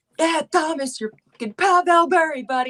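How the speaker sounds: put-on Long Island accent. Acting out an older guy at hockey, imitating screaming in a thick Long Island accent. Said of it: "Like in a thick Long Island accent, screaming".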